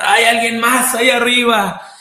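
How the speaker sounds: desperate, very high yelling shout.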